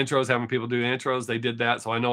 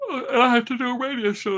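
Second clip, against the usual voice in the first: words pushed through a high yawn; 12 semitones higher than usual. Before hosting a radio show, the speaker talks while yawning. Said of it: "here I am yawning".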